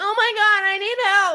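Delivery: fake female voice, very high, shrill and loud. Retelling how a guy called out for help in a fake female voice. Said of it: "puts on a female voice and acts like".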